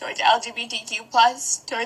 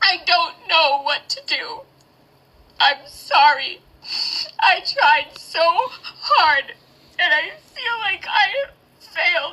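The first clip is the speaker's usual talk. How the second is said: crying, speaking much slower; 6 semitones higher, 4 dB louder than usual. Worried for many people and not knowing what to do, crying. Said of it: "ever actually seen me cry".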